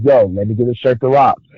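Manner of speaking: ordinary talk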